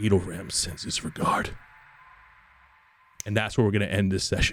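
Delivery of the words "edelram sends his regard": hushed whisper, close into the ear. Voicing someone who whispers into a character's ear: whispering. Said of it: "somebody whispers into your ear".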